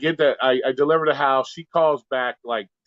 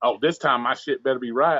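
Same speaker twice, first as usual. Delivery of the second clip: plain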